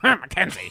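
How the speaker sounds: very loud, high, furious angry shout. Retelling what the angry caller said: imitating an angry caller. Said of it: "Who just called up and was angry".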